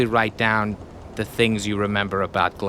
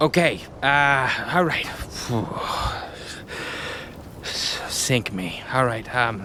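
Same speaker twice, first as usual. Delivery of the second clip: slow, halting, teary, on the verge of tears; 3 semitones higher than usual. A narrator voices a pirate hit by words he wasn't prepared for, teary. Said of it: "his eyes actually start to water".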